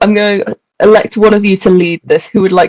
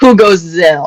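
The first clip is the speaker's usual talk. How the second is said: put-on French accent; 3 semitones lower than usual. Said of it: "I just have to distinguish the characters".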